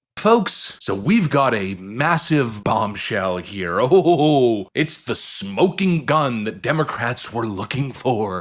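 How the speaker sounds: dripping sarcastic hype, long stretched-out oh. A commentator introducing the next accusation to viewers: sarcastic. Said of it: "sense the sarcasm in my voice".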